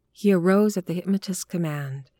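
ordinary delivery

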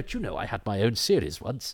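put-on reminiscing veteran actor voice. Play an actress wondering aloud about her one series, like a 50-year-old actor reminiscing. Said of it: "talks like a 50-year-old actor reminiscing".

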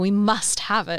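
normal talking voice

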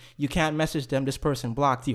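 ordinary talk, nothing marked

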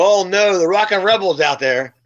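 normal talking voice

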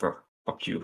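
put-on angry voice. Retelling what they said back to a man asking for a commission, retelling an angry retort. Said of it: "I was so mad".

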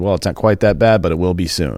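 normal talking voice

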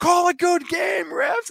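very high-pitched, drawn-out yelling. Retelling what Joel shouted at the referees' motorcade, imitating Joel yelling. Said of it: "He's yelling at the refs".

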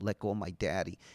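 imitated crying child voice. Retelling his daughter pushing a cop's legs: imitating a crying child. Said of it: "And she's crying".

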